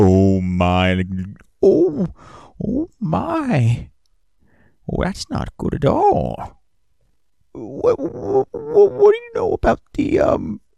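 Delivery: shaken, alarmed voice, very high and very slow. Voicing an NPC who has just turned pale: alarmed NPC voice. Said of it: "his face immediately turns a shade of pale".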